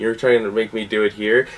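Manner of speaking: ordinary delivery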